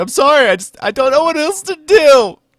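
very high, very loud fake crying and sobbing. Acting out an imagined scene crying into the camera: mock crying. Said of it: "I'm crying into the camera".

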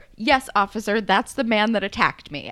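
put-on, very clear, distinctly spoken delivery. Retelling a character identifying her attacker to an officer: imitating a loud, clear declaration. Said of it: "so loud and so clear".

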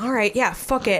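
ordinary delivery

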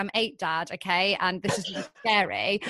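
normal talking voice

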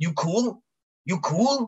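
put-on thick, high-pitched Irish accent, laid on heavily. Before rounding the corner, the speaker retells a man's question: thick Irish accent. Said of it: "some thick Irish accent".

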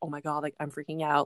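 put-on panicked voice. Retelling fainting and what was said then: retelling own panicked words. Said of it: "I was, like, panicking".

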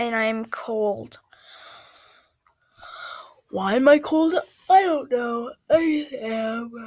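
talking through a yawn. While recording, yawning while talking. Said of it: "Can you stop yawning in the middle of recording?".

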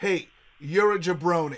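ordinary talk

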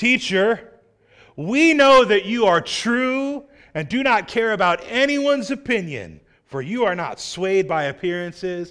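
swooping, dripping sarcastic flattery, true stretched out. Reading the leaders' flattering words to Jesus: imitating dripping sarcasm. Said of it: "read this as though it is dripping with sarcasm".

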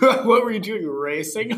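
high, patronizing, condescending tone. A person the narrator has just met questions the narrator: condescending. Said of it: "All condescendingly".

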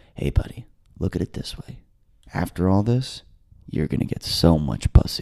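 close, hushed whisper. Retelling what the arresting cop said in the elevator: imitating a whisper. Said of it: "the cop whispers in my ear".

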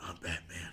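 hushed, soft, breathy whisper, very close. Retelling how an actor whispered on set: whispered Batman line. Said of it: "he'd just whisper to him sometimes".

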